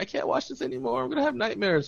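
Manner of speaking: put-on frightened, very high, pleading voice. Quoting a woman who got scared during a movie, imitating someone scared. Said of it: "she got all scared".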